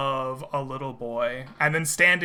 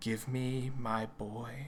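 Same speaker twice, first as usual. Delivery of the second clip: cold, even, measured, distant, very hushed voice; 2 semitones lower, 10 dB quieter than usual. A narrator voices a woman in the scene: measured, cold, distant voice. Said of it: "in a measured and even voice, though cold and distant".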